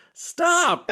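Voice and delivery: a high-pitched, slow outburst, exasperated and confused. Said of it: "I thought I was having a stroke".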